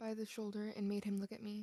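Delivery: ordinary delivery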